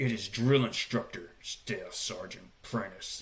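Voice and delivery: angry whisper, close in the ear. Speaker retells a drill instructor pulling him close to his ear, mock angry whisper. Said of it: "he's like whispering in my ear all angrily".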